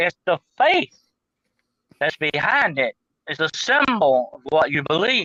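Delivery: ordinary delivery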